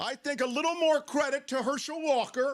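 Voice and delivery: very high, shrill yell. Arguing that Herschel Walker deserves more credit, yelling. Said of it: "Why are you yelling?".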